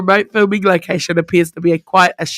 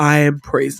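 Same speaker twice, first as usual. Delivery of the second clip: put-on low, deep, grand voice. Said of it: "like, a deep voice".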